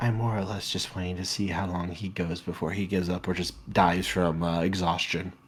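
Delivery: very quiet, low, rushed, hushed half-whisper. Voicing a character who shakes his head and half-whispers to you, half-whispering. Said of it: "as he whispers to you".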